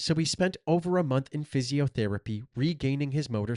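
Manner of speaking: plain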